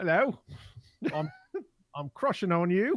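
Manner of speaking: slipping into Australian accent. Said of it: "Already Australian".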